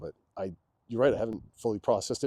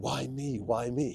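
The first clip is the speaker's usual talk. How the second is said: mock drawn-out tearful crying, very slow; 3 semitones higher than usual. Retelling what he was told he did, imitating yelling while crying. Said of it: "broke down crying and you were yelling".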